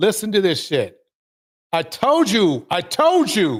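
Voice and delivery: agitated, upset, worked-up outburst. Replaying a clip so a guest hears everything, the speaker is getting upset. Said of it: "Sorry, I'm getting upset".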